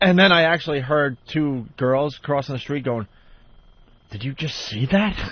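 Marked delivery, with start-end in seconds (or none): 4.1-5.2 acted, mock shocked disbelief. Retelling two girls crossing the street reacting to what they saw: imitating shocked disbelief. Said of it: "they couldn't believe they just saw".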